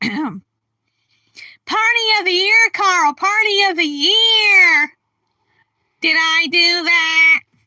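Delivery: loud sitcom nerd voice, year stretched out. Showing off a small repertoire of impressions, doing a Steve Urkel impression. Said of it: "I can do an impression of him".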